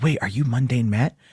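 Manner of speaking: put-on nervous, quivering, shaking voice. Retelling a kid's question at Comic-Con: imitating a nervous quivering voice. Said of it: "voice quivering 'cause he's".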